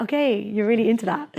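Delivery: plain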